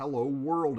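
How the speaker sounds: ordinary delivery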